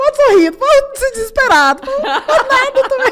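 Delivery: very high, loud, choked-back crying. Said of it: "Tentando engolir o choro a seco".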